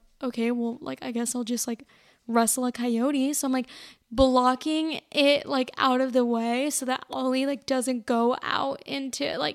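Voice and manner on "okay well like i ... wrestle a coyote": usual speaking voice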